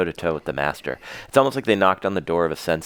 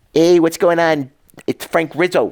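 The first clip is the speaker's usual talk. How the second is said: very high, loud, belted prank-call voice; 11 semitones higher, 6 dB louder than usual. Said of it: "That's my, uh, Jerky Boys impersonation".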